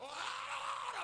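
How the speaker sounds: shouting.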